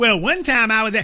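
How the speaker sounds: mocking put-on voice. Mocking someone's weak example of sexism: mocking imitation of him.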